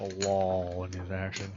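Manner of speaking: very low, deep, put-on southern drawl. Repeating a co-host's phrase back, mimicking a southern drawl. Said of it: "His is southern drawl".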